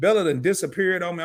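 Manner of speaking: ordinary talk, nothing marked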